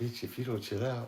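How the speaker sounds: toned-down, very soft, quiet voice. Retelling one of his bits where he realizes it's a woman; retelling a softened tone. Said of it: "So I softened my tone".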